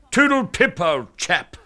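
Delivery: high, put-on posh upper-class English accent. Mocking english people who wander around saying a stock phrase. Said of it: "Sixty million Poms all wandering around saying".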